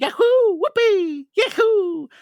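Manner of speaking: very high, loud cheering whoops. Explaining why a whole movie in the game voice would annoy: Mario video game voice. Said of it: "I can listen to a whole movie going".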